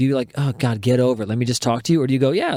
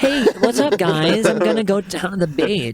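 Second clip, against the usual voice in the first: put-on LA voice, pitched higher; 7 semitones higher than usual. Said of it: "I can do a good impression of L A people".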